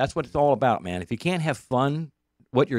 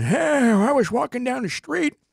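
put-on small little old man voice. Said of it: "little old man".

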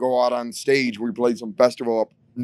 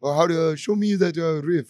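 put-on sloppy, half-hearted French Canadian accent, pitched up; 5 semitones higher than usual. Retelling a guitarist asking to be shown a riff: half-assed french canadian accent. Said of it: "I can't do a French Canadian accent, but that's my half-assed bullshit version".

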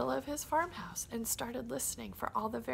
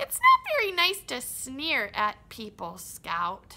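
belted out, swooping and silly; 9 dB louder than usual. Reading a story aloud, the mouse talking to Scout: Timothy Mouse voice. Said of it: "Timothy Mouse was sitting in the middle of his farmhouse".

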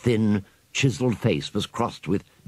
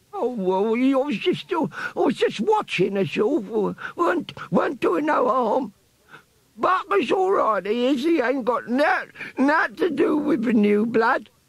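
put-on very high, squeaky, croaking old rat voice, slow. Narrating a story, voicing an old rat questioned about spying, squeaky, croaky old rat voice. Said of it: "An old brown rat lay on the ground before him. His thin, chiseled face was crossed with many wrinkles, and the fur round his temples was grey. The rat was nursing his head and uttering indignant cries through gummy lips. ... squeaked a croaky voice as Piccadilly gave the tail a sharp yank".

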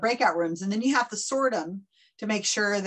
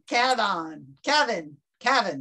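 Bostonian accent. Calling a participant by name repeatedly, then in a Boston accent. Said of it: "or in a Boston accent".

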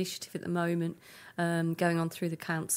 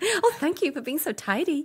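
very high, loud put-on American accent; 10 semitones higher, 6 dB louder than usual. Recalling a talking bin at a theme park, the speaker quotes it in an American accent. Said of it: "That was a good American accent".

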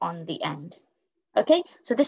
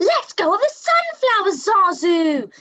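very high, loud, really cross voice, drawn out; 11 semitones higher, 5 dB louder than usual. Reading a story aloud, voicing a character's exclaimed line, really cross. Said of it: "because she is really, really cross".

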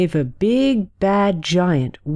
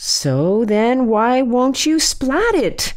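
pressing, insistent, demanding; 4 semitones higher than usual. Narrator reads a character pressing her mom for a reason, demanding. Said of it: "demanded Susie".

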